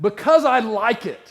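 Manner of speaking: very loud, high-pitched yell at full volume. Retelling a plot where a husband answers his wife: imitating a man yelling back. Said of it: "he just yells back".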